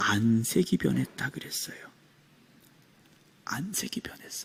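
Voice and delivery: soft, hushed, unvoiced whisper, dropping to a whisper.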